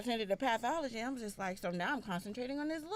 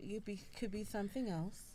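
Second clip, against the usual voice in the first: ordinary talk, nothing marked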